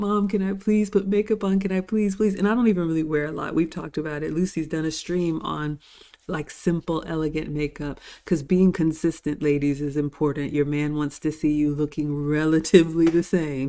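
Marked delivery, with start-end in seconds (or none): 0.0-2.3 put-on high, childish, pleading, begging little-girl voice. Recalling asking her mom as a young girl: retelling pleading as a girl. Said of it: "I remember like pleading".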